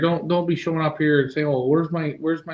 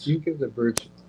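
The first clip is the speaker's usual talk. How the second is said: hushed whisper; 6 dB quieter than usual. Asking the others a question the speaker thinks may be stupid, whispering. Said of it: "why are you whispering".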